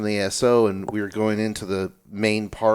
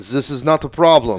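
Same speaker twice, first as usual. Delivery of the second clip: put-on French accent, higher and louder; 4 semitones higher, 6 dB louder than usual. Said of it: "French accent".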